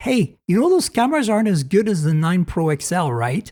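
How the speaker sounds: small, wicked, evil little devil voice. Voicing the little devil that comes out of one's head: little devil voice. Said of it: "the little devil comes out of my head and sits right there and goes".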